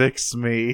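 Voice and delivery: put-on dramatic tone. Retelling an episode where a character grabs Wheeljack's hand, mock-dramatic plea. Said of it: "very dramatically asks Wheeljack to fix him".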